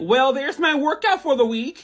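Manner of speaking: put-on Midwestern American accent.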